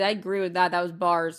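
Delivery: ordinary delivery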